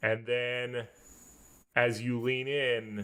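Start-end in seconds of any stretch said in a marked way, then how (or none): none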